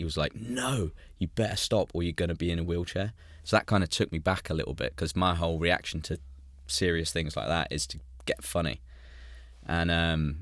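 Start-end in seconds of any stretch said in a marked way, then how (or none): 0.3-3.1 put-on angry voice. Retelling a consultant's angry warning after a joke: imitating an angry doctor. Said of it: "he got really angry, pointed at me".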